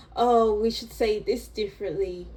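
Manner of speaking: usual speaking voice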